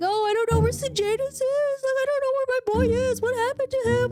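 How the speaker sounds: very high, weepy, tearful crying speech. Retelling a mother asking where her son is: imitating someone crying. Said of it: "And she's crying, saying".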